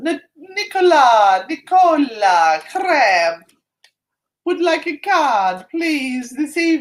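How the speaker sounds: put-on Italian accent, loud and high pitched. Drawing a card for someone during a reading, in an italian accent. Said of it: "Why am I doing the Italian accent?".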